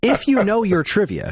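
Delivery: condescending, patronizing, know-it-all lecturing tone. Opening a trivia point in a mock-condescending tone. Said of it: "let me make sure I'm getting the condescending tone down".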